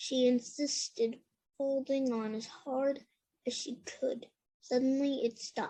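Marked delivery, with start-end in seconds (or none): none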